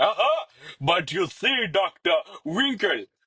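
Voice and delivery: high, royal-sounding character voice. King Julien speaks to Doctor Winkle, in King Julien voice. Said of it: "King Julian reclined on his royal throne".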